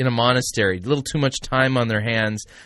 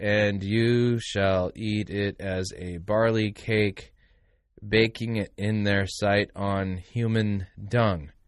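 very slow, deliberate reading aloud; 3 semitones lower, 5 dB quieter than usual. Reading a passage from Ezekiel chapter 4 aloud, very slow reading. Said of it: "Let me read it slow".

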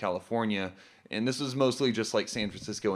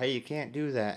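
put-on Southern accent; 2 semitones higher, 3 dB quieter than usual. Acting out a cop stopping an armed man: southern accent. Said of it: "we're giving them the southern accent".

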